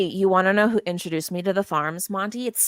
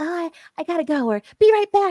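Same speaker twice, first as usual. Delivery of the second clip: mocking, derisive, very high-pitched voice; 10 semitones higher, 3 dB louder than usual. Imitating people in chat who announce leaving: mocking imitation of chatters leaving. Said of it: "there's people that run around and are like".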